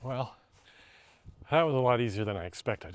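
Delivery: winded and breathless. Having just finished the task, the speaker talks winded. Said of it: "I'm winded".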